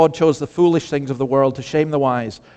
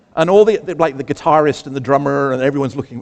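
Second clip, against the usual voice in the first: ordinary talk, nothing marked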